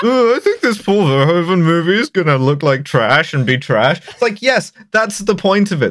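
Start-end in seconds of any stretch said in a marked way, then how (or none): 0.0-4.0 derisive, mocking, dweeby nerd voice. Mocking a critic's negative review of a film: stupid nerd voice. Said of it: "in his stupid nerd voice".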